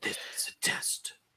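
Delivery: hushed, very quiet, barely voiced whisper. Chatting with co-hosts about test's theme music, whispered. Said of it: "Don't know why I whispered that".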